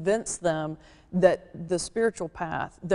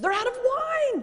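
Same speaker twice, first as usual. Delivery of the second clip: put-on very high, flustered, panicked alarm. Retelling the wedding at Cana, as Mary: imitating Mary in a panic. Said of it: "Mary comes to Jesus in a panic and goes".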